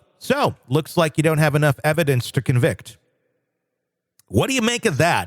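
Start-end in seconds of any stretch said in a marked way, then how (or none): 0.2-3.0 put-on self-satisfied, cocky, smug, taunting tone. Retelling what a suspect said to the sheriff: imitating a cocky tone. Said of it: "in a very kind of cocky tone".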